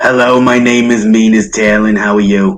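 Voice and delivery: hoarse female-sounding voice. The storyteller voices a blade speaking in a player's head: raspy feminine voice. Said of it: "You hear a raspy feminine voice in your head".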